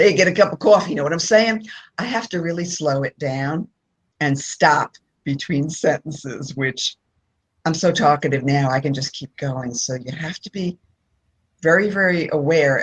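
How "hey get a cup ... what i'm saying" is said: fast, exaggerated, over-the-top New Jersey accent. Speaker from New Jersey showing how they can sound, exaggerated New Jersey accent. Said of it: "I can get all New Jersey".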